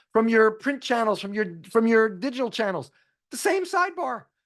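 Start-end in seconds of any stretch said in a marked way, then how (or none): 3.3-4.2 voice breaking, cracking and pitched up. Speaker getting excited mid-explanation, voice cracking. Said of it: "My voice cracked".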